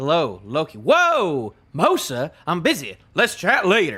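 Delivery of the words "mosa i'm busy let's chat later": swooping put-on Southern US accent. Streamer voicing a game character's dialogue: southern accent. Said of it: "I don't know why I'm giving him a southern accent".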